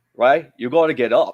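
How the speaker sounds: put-on broad Australian accent, laid on thick, loud, high. Retelling your trainer telling you to get up after being kicked down: thick Australian accent. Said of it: "with his thick Australian accent".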